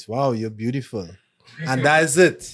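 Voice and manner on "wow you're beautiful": kind, sincere, genuinely meant nice voice. Retelling how a compliment is given: Rob's nice voice. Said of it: "Rob tell you in his nice voice".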